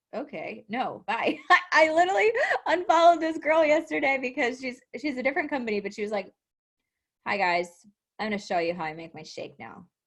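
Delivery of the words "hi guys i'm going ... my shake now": low, flat, dead-level monotone drone. Mimicking a girl's Instagram story she unfollowed, imitating a monotone voice. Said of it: "like monotone voice".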